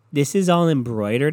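ordinary talk, nothing marked

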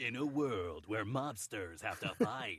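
very low, deep, movie trailer narrator voice. Imitating a movie trailer's narration: Don LaFontaine voice. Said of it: "the Don LaFontaine voice kind of being like this".

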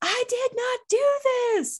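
screaming rant. Retelling an interview where the subject rants about being misunderstood: imitating a screaming rant. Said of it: "rants about being misunderstood and screams".

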